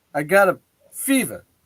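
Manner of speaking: very slow, deliberate, drawn-out delivery. Comparing another actor's slow speech: Christopher Walken impression. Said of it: "Christopher Walken's kinda like that too".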